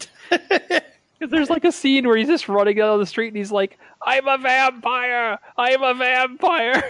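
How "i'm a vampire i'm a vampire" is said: high, slow, crazed yell. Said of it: "yelling it out".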